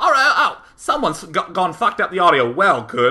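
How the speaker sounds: dramatized, put-on British accent. Retelling a phone call from London, the guy on the line speaks in a British accent. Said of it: "That's my British accent".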